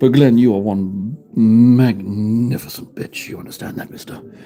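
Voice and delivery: hushed voice. Thanking a viewer named Glenn, trying not to be heard: whispering. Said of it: "turn it into a little bit of an A S M R stream".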